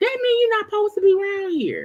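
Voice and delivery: put-on nice friendly voice. Telling viewers who ask about that man to unsubscribe: put-on nice friendly voice. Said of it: "I'm gonna say it in my nice voice".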